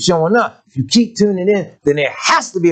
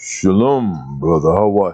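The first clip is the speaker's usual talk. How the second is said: put-on pious politeness, very low in pitch; 9 semitones lower than usual. Mocking people who put on a voice on Shabbat: imitating a put-on pious greeting. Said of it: "They ain't got to put on".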